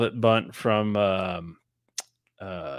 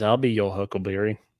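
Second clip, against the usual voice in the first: plain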